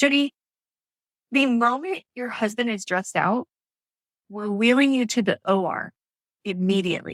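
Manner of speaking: ordinary talk, nothing marked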